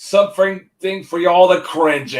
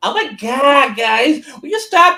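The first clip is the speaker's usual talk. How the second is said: put-on typical, high-pitched valley girl voice; 8 semitones higher than usual. Retelling what the actress playing Faye said to the fans, in a Valley Girl voice. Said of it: "in a typical Valley Girl voice".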